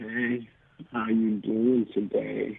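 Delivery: seductive, flirty, sexy delivery. Answering a request to sexy talk a condor: flirty sexy talk. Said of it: "if you were to sexy talk with a condor".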